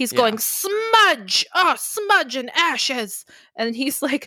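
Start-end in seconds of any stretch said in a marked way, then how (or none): 0.4-3.3 frantic, hysterical cursing, high and swooping. Retelling a film scene, the speaker acts out the enraged Gnome King: imitating Gnome King cursing hysterically. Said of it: "he's cursing in the most hysterical way".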